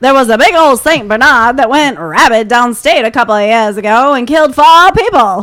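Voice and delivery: put-on full Maine accent, very loud, hollered. Quoting the kindly older neighbor from the movie, doing Fred Gwynne's Maine accent. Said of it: "you're nailing the Maine accent".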